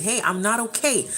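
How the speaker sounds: ordinary talk, nothing marked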